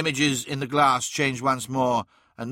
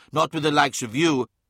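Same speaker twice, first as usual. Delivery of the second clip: ordinary delivery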